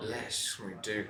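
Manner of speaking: hushed, put-on voice dropped way down. Agreeing that today's episode is different: put-on lowered voice. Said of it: "no one's gonna hear you if you lower your voice that much".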